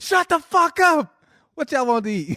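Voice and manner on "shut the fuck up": furious, angry shouting, pitched up. Telling a story about her calling from Wendy's; retelling her yelling. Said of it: "She's yelling".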